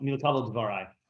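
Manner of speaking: usual speaking voice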